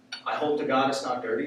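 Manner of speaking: ordinary talk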